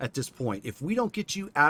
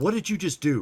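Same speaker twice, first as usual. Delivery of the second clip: really defensive, suspicious, guarded tone. Playing a woman looking around after an illusion is cast over everybody, really defensive. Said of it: "getting really defensive".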